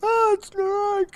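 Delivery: piercing, shrill, very high, loud scream. Narrating a story scene as a giant killer comes for everyone, screaming. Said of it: "I look up and scream".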